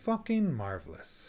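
pitch rising then falling downhill on marvelous. Demonstrating the negative way to say the phrase, rising then falling downhill.

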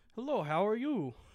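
heavy put-on Russian accent. Quoting a woman who looked nothing like her picture, thick Russian accent. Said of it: "she has like a thick Russian accent".

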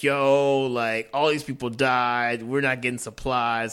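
normal talking voice

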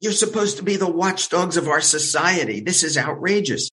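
play-acted high, indignant, outraged screaming rant. Retelling phoning a reporter and screaming at him: retelling own screaming. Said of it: "I started screaming at him".

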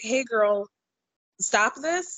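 acted-out gentle, mild, kindly tone. Speaker retells how someone spoke to a woman who got mad, mimicking a gentle tone. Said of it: "just gently being like".

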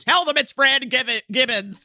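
mock desperate, mild, frantic screamed yell. Retelling a man being held down while the cops are called, retelling a scream. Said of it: "And Pierce is screaming".

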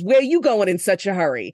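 put-on Long Island-accented speech. Retelling how a cop pulled you over for speeding, speak his words in a thick Long Island accent. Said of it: "he's got this thick Long Island accent".

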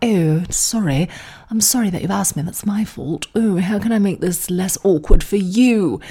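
put-on polite British accent. Retelling how British people respond when asked: imitating British people. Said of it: "British people be like".

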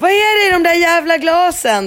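frantic, furious hysterical outburst, very high-pitched. A mother retells confronting him over offered drinks: retelling a hysterical outburst. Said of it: "Hysteriska mamman".

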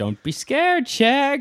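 very high-pitched, slow cartoon voice. Retelling a cartoon scene where the van stops: Fred Jones voice. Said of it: "and he's like".

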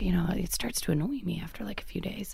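soft, hushed whisper under the breath.

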